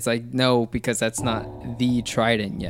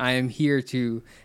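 ordinary delivery

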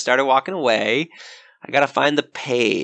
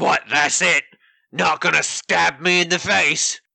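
barely conscious, wounded orc grunt voice; 4 semitones higher than usual. Left to rot by the adventurers, the orc grunt speaks up; barely conscious orc grunt. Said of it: "I'm just a grunt. / And he grabs his head and says, / We's an orc warband. / barely conscious".

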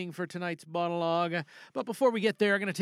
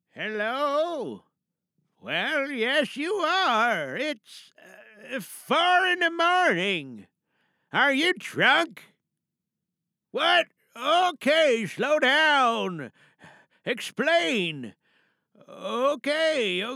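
performed grandfather character voice, pitched higher; 6 semitones higher, 4 dB louder than usual. Performer opening a monologue by answering a phone call, Grampy character voice. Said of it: "so we're going to be doing Grampy this evening for tonight's monologue".

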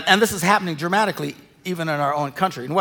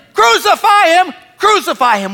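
very high, slow, drawn-out crowd yelling; 11 dB louder than usual. Speaker retelling the Jerusalem crowd turning on the Messiah, retelling a crowd's yell. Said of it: "they're yelling".

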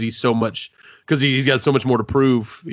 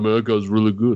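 good-natured, plainly impressed, simple genuine admiration. Retelling what the boxer says while getting beaten: Rocky voice. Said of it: "He's like".

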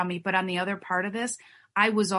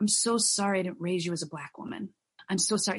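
acted, tearful voice, as if crying; 3 dB quieter than usual. Telling how she apologized to her daughter Brittany, retelling a tearful apology. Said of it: "I kind of went to tears and I said".

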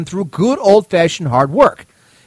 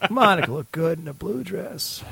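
put-on Southern politician voice, quieter; 3 semitones lower, 10 dB quieter than usual. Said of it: "anybody can do it".

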